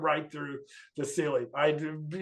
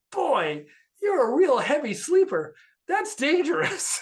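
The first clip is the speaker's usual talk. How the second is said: very high, rising, swooping, mock annoyed, irritated voice; 11 semitones higher, 3 dB louder than usual. Retelling own words to a wife on waking: retelling own irritated remark. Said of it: "I'm irritated".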